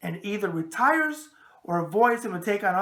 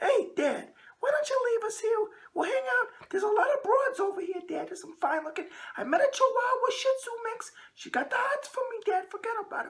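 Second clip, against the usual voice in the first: very high, tough-talking wiseguy dog voice; 4 dB quieter than usual. Speaker voices his dog Santino talking to him at the groomers; Santino's voice. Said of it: "Santino talks like this in his voice".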